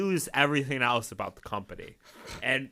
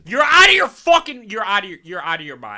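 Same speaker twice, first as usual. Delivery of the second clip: very loud, high-pitched yelling; 6 semitones higher, 11 dB louder than usual. A speaker reacts to someone calling pasta overrated; yelling. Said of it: "sorry for yelling into your ear".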